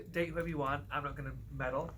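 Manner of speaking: plain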